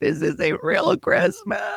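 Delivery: put-on crying. Retelling crying over Christmas at the in-laws' house: imitating own past crying. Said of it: "I was crying".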